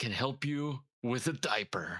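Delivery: whispering in a character voice. Playing a character who leans closer and tells an embarrassing story: whispering in character. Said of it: "and then he's gonna whisper".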